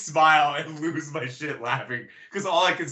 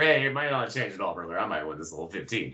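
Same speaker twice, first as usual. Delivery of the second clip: hushed, low, close half-whisper; 8 semitones lower, 5 dB quieter than usual. Retelling a wrestler half-whispering into the announcer's ear: imitating a half-whisper. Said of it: "whispers into his ear".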